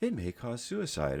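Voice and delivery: mock-cheerful ad voice. Mocking drug ads, the speaker imitates their mock-cheerful ad voice. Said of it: "they say it in a happy voice".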